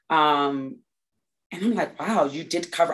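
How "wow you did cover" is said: ordinary delivery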